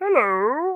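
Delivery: very high-pitched cartoon Martian voice. Wishing you could do voices like Mel Blanc, try one: The Martian voice from Looney Tunes. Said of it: "I could do, uh, The Martian".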